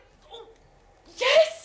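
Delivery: high, loud, overjoyed shout of joy.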